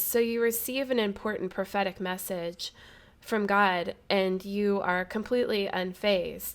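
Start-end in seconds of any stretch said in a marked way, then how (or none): none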